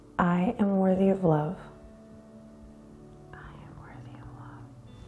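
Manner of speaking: soft, hushed whisper under the breath. Guiding listeners through a breathing exercise and affirmation: quiet whisper. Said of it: "Quietly whisper".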